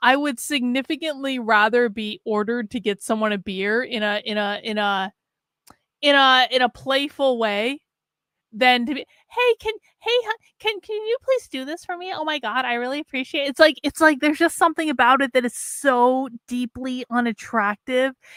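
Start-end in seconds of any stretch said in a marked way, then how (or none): 9.3-13.5 high, rapid, camp, flamboyant delivery. A woman acting out being politely asked for a favor, effeminate voice. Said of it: "effeminate voice".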